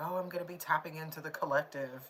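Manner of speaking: normal talking voice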